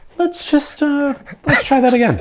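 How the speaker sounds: very high, slow voice rising at the end. Retelling the tone people use when asking to try again, high voice rising. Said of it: "that tone of like / it's the high voice goes up a little bit".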